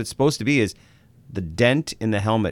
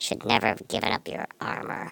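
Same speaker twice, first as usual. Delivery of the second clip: put-on voice through clenched teeth, quieter; 7 dB quieter than usual. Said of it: "I'll do that great voice".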